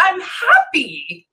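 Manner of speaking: put-on small childlike voice. Channeler relays the first words of a spirit coming through: almost childlike voice. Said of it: "like almost like childlike".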